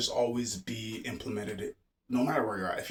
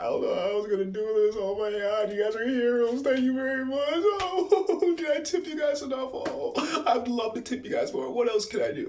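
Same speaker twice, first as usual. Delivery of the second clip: very high, teary, gushing, almost crying; 12 semitones higher, 4 dB louder than usual. Retelling customers' reactions after a house clear-out: imitating a customer near tears. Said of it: "just about crying".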